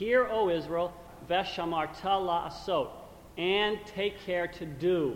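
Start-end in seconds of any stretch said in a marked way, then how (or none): none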